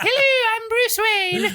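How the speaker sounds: put-on very high falsetto with British accent. Imitating how Bruce Wayne talks, in a high British falsetto. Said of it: "it's just a high falsetto, and it's British".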